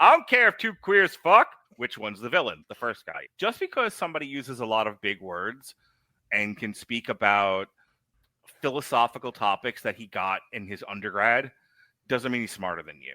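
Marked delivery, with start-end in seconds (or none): 0.0-1.5 very loud, very high, rural country holler. Recounting someone's joke, the speaker does a redneck impression. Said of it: "he does an impression of a redneck going".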